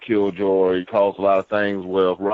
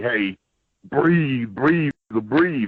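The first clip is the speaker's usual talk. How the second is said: put-on yelling, calling out repeatedly; 4 semitones higher than usual. Recalling when he couldn't breathe at a show, the speaker retells Tommy yelling at him. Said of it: "Tommy is just yelling at me".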